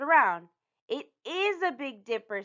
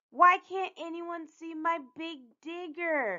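high-pitched, complaining moan; 7 semitones higher than usual. Usha, looking at the stars with Aarti and Gloria, moaning. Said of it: "Usha moaned".

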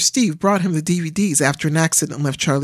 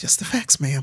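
quiet, soft mumbling; 3 semitones lower, 5 dB quieter than usual. [name], watched by his sister-in-law Trudy, quiet mumble. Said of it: "quietly mumbled".

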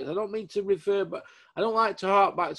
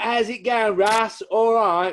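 put-on casual, raised East Ham London accent; 4 semitones higher, 5 dB louder than usual. Imitating a boxing figure's greeting: Mark Tibbs East Ham accent. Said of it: "Mark Tibbs is like".

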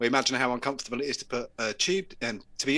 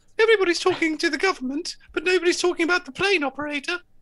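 very high, squeaky, shrill, loud, flat monotone; 6 dB louder than usual. Recounting an MP on the weekend news, doing a squeaky monotone Priti Patel voice. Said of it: "she got a really horrible squeaky voice that's monotone".

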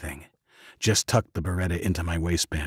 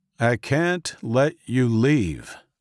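even, controlled, measured and very slow; 6 semitones higher, 4 dB louder than usual. The professor addresses the narrator and Luke, in a measured voice. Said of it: "said the professor in a measured voice".

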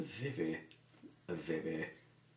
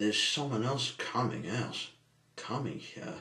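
ordinary delivery

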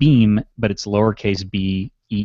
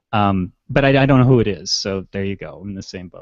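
usual speaking voice

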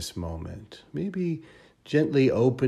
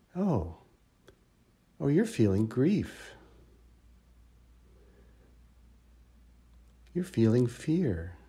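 caring, kind, gentle tone; 3 semitones higher than usual. Speaker demonstrating naming an emotion as for a struggling dear friend, kind and gentle. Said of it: "notice the tone of voice that I use".

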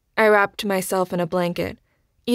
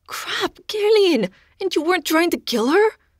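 blunt, very high-pitched worried voice; 11 semitones higher than usual. Jo reacts on seeing the narrator's scratched, bleeding legs: stressed, anger gone from voice.

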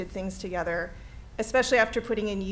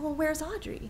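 play-acted mournful sympathy, sad, slightly high voice; 7 semitones higher, 3 dB quieter than usual. Recalling people who asked where audrey was: mimicking a sad voice. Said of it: "in this sort of, you know, sad voice".

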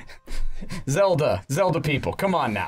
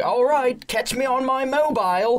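very high, put-on British accent; 11 semitones higher, 3 dB louder than usual. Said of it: "pick up an accent for no reason".

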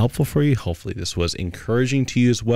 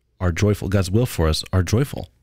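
ordinary talk

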